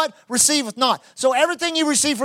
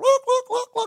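put-on hollered call, much higher; 11 semitones higher than usual. Hunter retelling calling snow geese by mouth, retelling a hollered goose call. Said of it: "So I start hollering at them".

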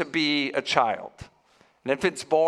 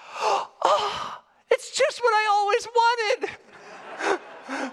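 put-on very high, tiny two-year-old toddler voice. Retelling what a two-year-old said opening presents, in her little two-year-old voice. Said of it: "in her little two-year-old voice".

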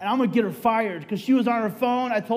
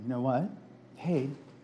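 put-on sweetest voice, lower and quieter; 10 semitones lower, 9 dB quieter than usual. Retelling speaking to the nurse who is bathing them: imitating own sweetest voice. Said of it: "in my sweetest voice".

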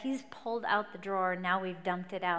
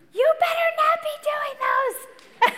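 put-on yelling, higher and louder; 12 dB louder than usual. Retelling a fight, yelling from another room: imitating her own yelling. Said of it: "I was yelling from the bedroom".

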